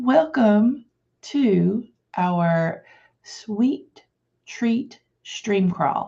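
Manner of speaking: very slow, careful, word-by-word delivery. Welcoming viewers to the stream and saying its name, very slow. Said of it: "I say that very slowly".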